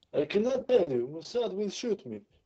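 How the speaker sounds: English spoken with a Bulgarian accent. New podcast co-host, asked to introduce himself, answers in a Bulgarian accent. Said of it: "in case you couldn't tell by the accent".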